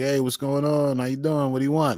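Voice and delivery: put-on Brooklyn accent. Imitating a grocery store clerk in brooklyn: imitating a brooklyn accent. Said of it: "go to any grocery store in Brooklyn and they'll be like".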